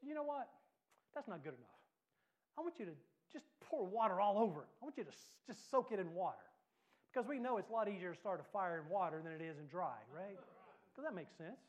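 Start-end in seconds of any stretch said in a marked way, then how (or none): 0.0-6.4 mock cocky, challenging tone. Retelling Elijah ordering water poured on the altar: imitating a cocky tone. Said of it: "Elijah gets a little cocky".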